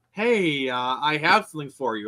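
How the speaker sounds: ordinary delivery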